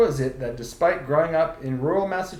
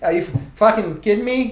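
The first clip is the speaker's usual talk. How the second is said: angry, loud, pitched-up put-on New England accent; 7 semitones higher, 6 dB louder than usual. Showing the character played back home: imitating a pissed-off New England guy. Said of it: "play this fucking guy who's kinda fucking pissed off at everything".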